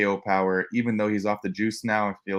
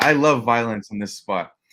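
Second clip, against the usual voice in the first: ordinary talk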